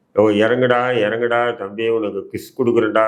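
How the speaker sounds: usual speaking voice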